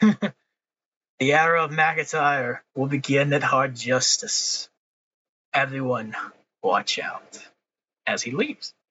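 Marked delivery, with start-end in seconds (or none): 0.0-7.4 slow and deliberate, every word weighed. Acting out a wrestler leaving after a challenge: Drew McIntyre voice, smirking. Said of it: "Drew just smirks".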